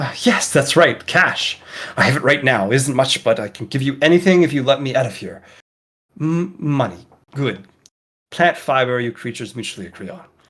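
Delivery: lively, excited creature voice. A storyteller voices a man answering a creature, in a more excited tone. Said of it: "in a more excited tone".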